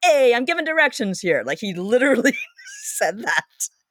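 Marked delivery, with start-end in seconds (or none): 0.0-1.4 exaggerated New York accent. Retelling a stranger who cut in while giving directions; stereotypical New York accent. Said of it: "the most stereotypical New York accent you can picture".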